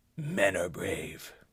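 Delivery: very quiet, deep, hushed superhero voice, done badly. Quoting a film scene, the speaker does a bad Batman voice. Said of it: "that was a bad Batman voice".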